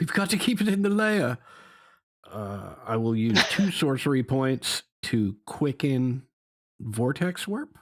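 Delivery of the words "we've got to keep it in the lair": frantic, panicked, very high-pitched scream. Voicing a character in a spell-casting game, panicked scream. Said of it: "With panic in his voice, Cal screams out".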